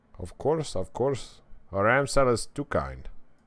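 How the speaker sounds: put-on Indian-accented voice. Narrator voicing the coffee shop owner's reply: Apu impression. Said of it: "Doing my best Apu impression".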